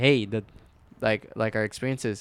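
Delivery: normal talking voice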